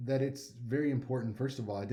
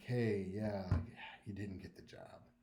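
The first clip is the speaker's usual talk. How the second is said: apologetic, regretful tone, voice shifted lower; 5 semitones lower, 7 dB quieter than usual. Demonstrating how to deliver bad news to someone; voice shifted down. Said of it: "everything shifts down".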